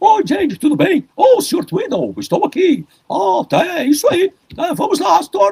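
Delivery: very high, squeezed cartoon character voice. Showing how the George Jetson voice went: George Jetson voice. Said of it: "que é uma voz mais ou menos assim".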